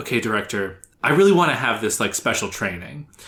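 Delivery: ordinary talk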